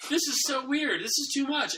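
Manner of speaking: high-pitched, incredulous reaction.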